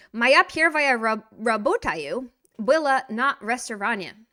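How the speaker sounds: Russian spoken loudly with an American accent. Answering a question in Russian: American accent on Russian. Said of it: "let's get our American accent going".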